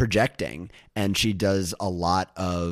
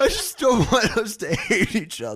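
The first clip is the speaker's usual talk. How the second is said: put-on crying voice, higher; 14 semitones higher, 4 dB louder than usual. Imitating Tom Sandoval after being asked for an impression: imitating Tom Sandoval crying. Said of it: "the Tom Sandoval, like, crying voice".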